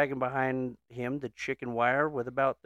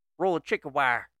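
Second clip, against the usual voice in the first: put-on Southern American accent. Telling a joke, voicing a boy answering back: southern accent. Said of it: "why are they Southern?".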